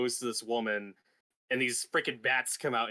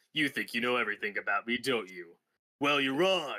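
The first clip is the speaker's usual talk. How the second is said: put-on, childish voice. Quoting a favorite Kevin Conroy line reading from the movie: imitating Kevin Conroy sounding childish. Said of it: "my favorite Kevin Conroy line reading".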